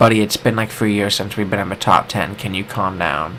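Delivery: plain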